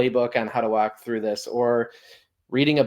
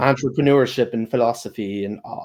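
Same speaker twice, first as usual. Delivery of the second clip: tongue-in-cheek put-on British accent. Speaking on a podcast, joking British accent. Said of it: "that was the best uh, British accent I had right there".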